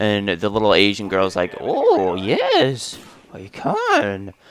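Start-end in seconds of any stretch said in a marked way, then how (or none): 1.6-4.3 high, very slow, drawn-out lilting sing-song. Retelling what the girl trimming his hair said: Yoda-like voice. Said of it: "she kinda sounded like Yoda there".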